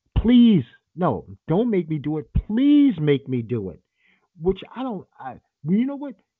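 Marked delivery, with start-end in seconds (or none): 0.2-3.8 mock screaming, slower. Retelling how a man screamed while choking a kid, retelling a scream. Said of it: "He's choking him and screaming".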